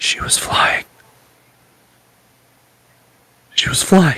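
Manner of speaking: hushed whisper. Voicing a dazed mother in a game scene: whispering. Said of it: "And she whispers".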